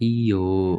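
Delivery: iyo said in a refusing tone. Explaining japanese refusal words: refusing tone on iyo. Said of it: "lebih ke nadanya tuh nada menolak".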